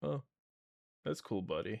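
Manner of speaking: play-acted nonchalant, unexcited, soft, flat, low-energy delivery. Retelling a reply to Nephew Crow's excitement: imitating own low-energy reply. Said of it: "too low energy".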